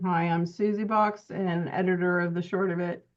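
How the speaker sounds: ordinary talk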